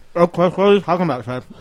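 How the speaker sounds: garbled mouth-full speech. Co-host answering the host's greeting at the start of the show, talking with mouth full. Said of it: "Don't you know it's rude to talk with your mouth full?".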